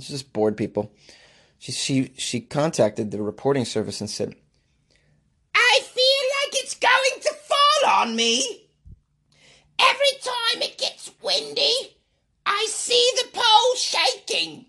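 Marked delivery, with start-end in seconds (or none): 5.5-14.5 very high, drawn-out comedic woman falsetto voice. Speaker quotes a woman's complaint to a reporting service, Monty Python female voice. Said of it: "when Monty Python does their female voice".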